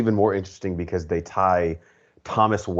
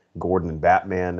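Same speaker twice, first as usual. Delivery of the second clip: normal talking voice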